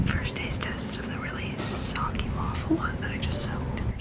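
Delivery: high, soft whisper.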